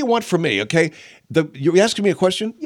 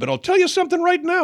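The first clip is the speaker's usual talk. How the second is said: tough-guy voice cracking up high. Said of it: "your voice cracks like that".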